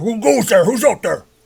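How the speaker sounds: called out voice. Voicing a guard who calls out toward hidden intruders: guard calling out. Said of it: "the one calls out this guy here".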